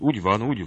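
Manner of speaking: usual speaking voice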